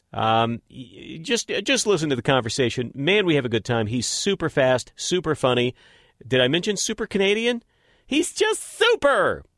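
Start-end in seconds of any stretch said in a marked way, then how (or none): 8.1-9.4 put-on effeminate voice, very high pitch. Praising someone he had a conversation with, in an effeminate voice. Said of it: "the effeminate take on that".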